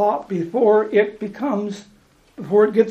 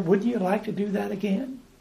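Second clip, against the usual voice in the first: put-on whisper, quieter; 7 dB quieter than usual. Speaker acting out temptation from a bad memory, whispering as the Devil. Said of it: "The devil kind of whispers in your ear".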